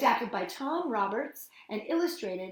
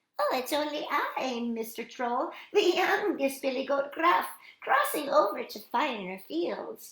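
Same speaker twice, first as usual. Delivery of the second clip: little, tiny voice; 5 semitones higher, 3 dB louder than usual. Narrator reads the youngest goat answering the troll: tiny Billy Goat Gruff voice. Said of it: "said the little goat in a tiny voice".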